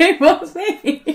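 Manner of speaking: delighted, laughing voice. Confirming they beat the national champion: pleased, laughing. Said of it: "You're so pleased".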